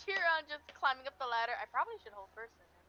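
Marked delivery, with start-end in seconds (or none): 1.6-2.7 quick, hushed muttering under the breath. A player voices his character watching another character climb a ladder; muttering. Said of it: "Mordor just kind of mutters".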